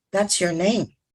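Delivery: ordinary talk, nothing marked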